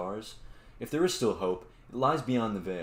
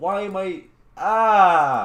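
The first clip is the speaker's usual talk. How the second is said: very loud, very slow, drawn-out frightened shriek; 10 semitones higher, 13 dB louder than usual. Playing a horror game and startled by noises, screaming in fright. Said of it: "Let me stop screaming".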